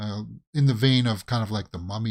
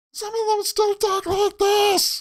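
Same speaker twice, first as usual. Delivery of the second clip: put-on very high, too-young voice of a young kid; 3 dB louder than usual. Complaining the Turtles sound too young: imitating the Turtles' too-young voices. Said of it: "that was me trying to talk like".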